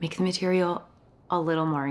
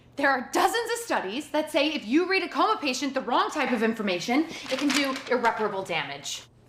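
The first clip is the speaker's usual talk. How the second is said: loud yelling, much higher pitch; 8 semitones higher than usual. Having come in to confront the people there, yelling at them. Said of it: "you can't just come in here and yell at us like this".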